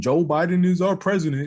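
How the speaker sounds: high, mocking put-on voice. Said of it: "She just kept saying".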